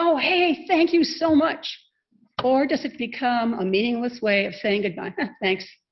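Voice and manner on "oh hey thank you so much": eager, enthusiastic, high-pitched voice. Talk on how we say thank you, enthusiastic thank you. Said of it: "do you say it with enthusiasm?".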